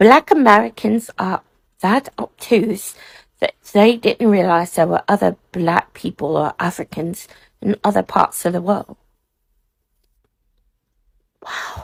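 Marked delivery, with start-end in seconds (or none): 0.0-9.0 put-on British accent. Answering a video maker by copying their accent switch, fake British accent. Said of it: "I turned my Texas American accent off and sounded like I was from Britain".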